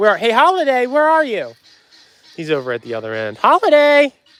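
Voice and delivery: voice cracking. Calling for a feathered animal at the far end, voice cracking. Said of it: "Hear my voice cracking?".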